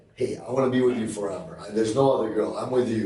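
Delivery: normal talking voice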